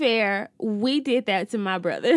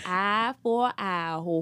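put-on New Orleans accent, lower pitch; 3 semitones lower, 4 dB quieter than usual. Showing a co-speaker how to say a sign-off name, use a put-on New Orleans accent. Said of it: "You got to say it like you're from New Orleans".

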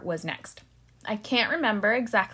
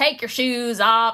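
loud put-on Southern US accent; 7 dB louder than usual. Imitating a TSA security officer giving an order, in a Southern US accent. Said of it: "has a Southern accent".

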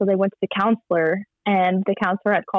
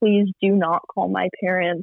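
mock sobbing, begging voice. Retelling how the speaker begged a woman not to call her parents, retelling a sobbing plea. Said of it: "I was sobbing".

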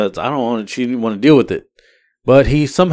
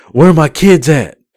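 loud, raised shouting yell; 4 semitones higher, 6 dB louder than usual. Retelling the woman in the other truck yelling at them, retelling her yelling. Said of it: "She's like yelling at me".

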